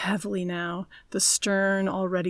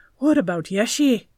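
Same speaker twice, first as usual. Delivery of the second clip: empty-sounding, hollow voice, raised; 4 semitones higher, 7 dB louder than usual. Norsen asks Thekla after hauling her into the boat, in a hollow voice. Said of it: "Norsen asked, his voice hollow".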